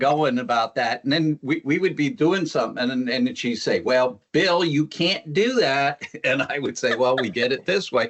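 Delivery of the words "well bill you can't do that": slow Texas drawl. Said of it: "her Texas accent will kick in".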